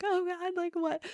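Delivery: very high, tearful crying blurt. Retelling being stopped by a police officer: imitating own past crying.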